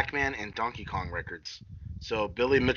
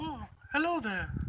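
very high-pitched cartoon bear character voice; 13 semitones higher, 10 dB quieter than usual. Praising the casting of the original voice actor, the speaker does a Winnie the Pooh voice. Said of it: "Yeah, there you go".

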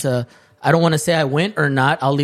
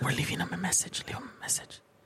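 soft, breathy whisper under the breath; 2 semitones higher, 16 dB quieter than usual. Leaving a phone message for a friend, whispering. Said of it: "Why are we whispering?".

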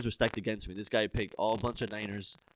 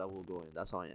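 ordinary talk, nothing marked

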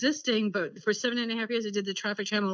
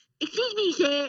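high-pitched put-on cartoon child voice. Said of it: "I should use my Cartman voice".

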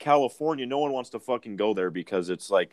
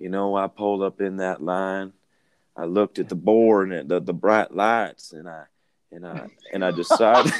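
musing, scene-setting, monologue-like storytelling tone; 3 dB louder than usual. Imagining Matthew McConaughey answering about a Wendy's order: Matthew McConaughey impression. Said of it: "And he's like".

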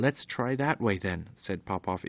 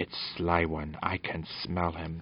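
low, slow, fierce growling dog voice; 4 semitones lower, 4 dB quieter than usual. The dog in the story speaks to the children with a low fierce growl. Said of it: "with a low fierce growl".

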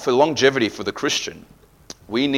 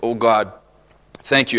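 plain

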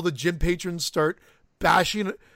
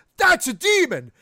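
very high, shrill, loud sudden outburst; 10 semitones higher, 5 dB louder than usual. Quoting a line he exclaims in something the speaker wrote, exclaiming.

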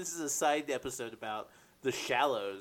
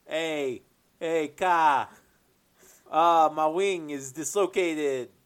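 loud, put-on Bronx accent; 6 dB louder than usual. Improvising a bird on a buoy with a hurt wing, in a put-on Bronx accent. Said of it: "I don't know why I'm giving him a Bronx accent".

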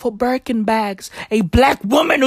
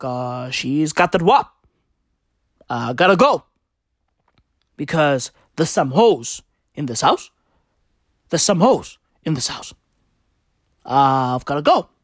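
very low, deep character voice; 9 semitones lower than usual. Acting out a made-up breakup scene: imitating Barack Obama. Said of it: "And Barack was like".

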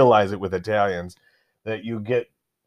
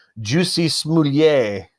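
fancy-sounding put-on voice, pitched up; 5 semitones higher than usual. Announcing a name that made the news: Dave Chappelle impression. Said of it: "let me say it like, uh, Dave Chappelle".

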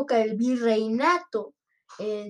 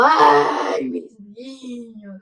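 loud, anguished, grief-stricken crying wail; 8 dB louder than usual. Telling of a woman left alone at the river without her children, acting out a woman screaming. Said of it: "solo se quedó gritando ahí en el río".

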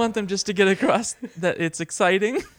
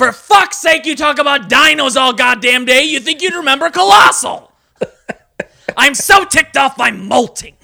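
loud, shrill cartoon parrot voice; 7 semitones higher, 7 dB louder than usual. After plugging a podcast, a speaker rants in character as Gilbert Gottfried as Iago. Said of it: "it was Gilbert Gottfried as Iago".

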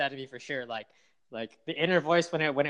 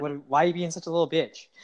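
ordinary delivery

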